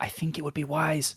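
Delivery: hushed whisper. Exploring a close, echoey place with the others, asking for light: whispering. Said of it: "I'm trying to whisper here".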